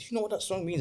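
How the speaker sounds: put-on teacher voice, scolding and shouting. Retelling the head teacher's question to the boys: imitating a teacher shouting. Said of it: "she was, like, shouting".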